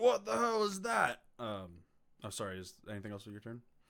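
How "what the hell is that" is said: flustered troll yell, very high and very loud. During a game, the speaker voices a troll reacting to a spell, in a troll voice. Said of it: "The troll's like".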